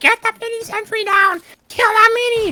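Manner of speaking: very high, very loud, shrill goblin screech. Recreating how he screams at his demo teammate in real games, screaming in goblin voice. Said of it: "I actually sound like a goblin when I say that".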